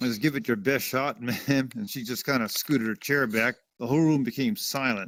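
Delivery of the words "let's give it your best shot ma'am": mock snarling, menacing tone. Retelling leaning over to a lady asking questions: retelling a snarl. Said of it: "I kinda snarled at her".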